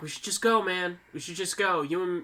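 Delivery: ordinary talk, nothing marked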